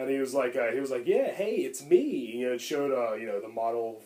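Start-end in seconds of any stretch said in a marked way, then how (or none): 1.1-2.3 put-on weird, very slow Southern accent. Retelling a deleted movie scene: imitating a weird Southern accent. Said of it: "he had this weird Southern accent".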